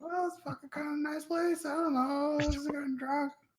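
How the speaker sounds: put-on very high, loud, sloshed, drunken rambling. Found in the corner and asked how long he's been there, a character answers, completely wasted. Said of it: "He's completely wasted".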